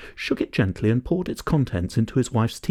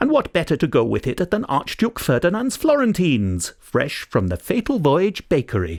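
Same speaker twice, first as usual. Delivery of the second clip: beaming, jolly, cheery, proud tone, pitched up; 5 semitones higher than usual. A narrator voices the tea blender serving tea and cakes to his guests: beaming, happy host. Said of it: "The door of the tea blenders was opened by a plump, jolly-faced man. / The door of the tea blenders was opened by a plump, jolly-faced man. He had wavy grey hair, a little moustache, and, given the pu".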